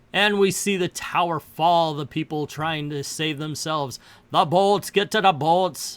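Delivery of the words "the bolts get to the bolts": really bad, fake Austrian accent. Retelling a movie scene with people trying to save themselves, bad Arnold Schwarzenegger impression. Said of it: "That's my really, really bad Arnold Schwarzenegger impersonation".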